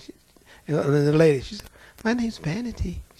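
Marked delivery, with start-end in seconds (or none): 2.0-3.0 gentle, demure and sweet voice. Retelling a demon naming itself during a deliverance: imitating a sweet, demure demon. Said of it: "She sounded just as sweet and demure".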